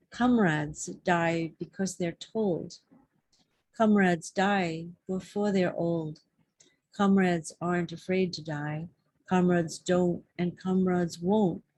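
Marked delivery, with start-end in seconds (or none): none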